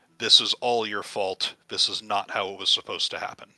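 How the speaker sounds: very low-pitched, menacing, threatening voice. A narrator voices a crying woman who stares at the listener: very low, threatening voice. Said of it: "in a very low, threatening voice".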